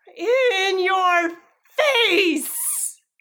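very uncertain jeering tone. Player voicing her character taunting a man about to leave, very uncertain taunt. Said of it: "she does very uncertainly goes".

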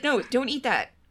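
put-on unsure voice. Imitating a parent scolding a drunk friend: Mando's half-hearted parent voice. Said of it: "he's talking to a drunk friend".

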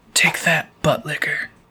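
tossed-off, taunting private aside. Voicing a character who grins after a hit, said under his breath. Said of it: "grins and says under his breath".

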